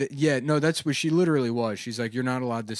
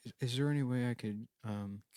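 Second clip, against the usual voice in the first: very quiet, shy, hesitant, halting voice; 10 dB quieter than usual. Acting out a shy person walking quietly to the bar: acting quiet and timid. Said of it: "quietly walk to the bar and be like".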